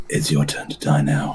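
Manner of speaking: soft, sultry, seductive whisper. Voicing a character taunting an enemy into a cane: seductive whisper. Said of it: "just gonna whisper into my cane seductively".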